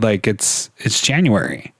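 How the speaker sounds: plain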